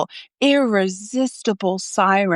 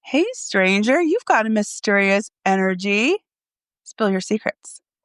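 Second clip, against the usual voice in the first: seductive, alluring, beckoning siren voice. Showing how to answer a "hi" text: alluring siren tone. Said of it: "Do you hear that siren tone".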